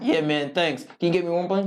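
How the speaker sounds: plain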